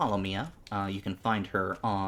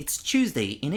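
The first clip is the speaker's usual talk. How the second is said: butchered fake British accent, pitched up; 6 semitones higher, 4 dB louder than usual. Admitting to Mia they're butchering her accent: bad British accent. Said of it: "authentic British accent there".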